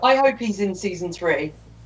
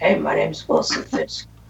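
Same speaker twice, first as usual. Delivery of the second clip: hushed whisper, lower; 4 semitones lower than usual. Acting out two characters in prison together: whispering. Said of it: "Just them whispering to each other like".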